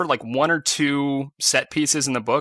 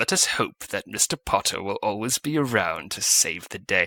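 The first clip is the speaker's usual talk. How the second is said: disdainful put-on villain voice through teeth, lower; 5 semitones lower, 3 dB quieter than usual. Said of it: "the way he says his lines through gritted teeth".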